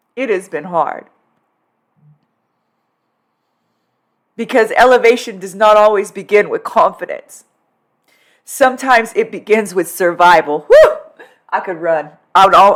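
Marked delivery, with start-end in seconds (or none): 0.2-10.6 tearing up, choked with emotion. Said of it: "I'm about to tear up again".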